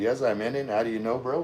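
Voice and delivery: ordinary talk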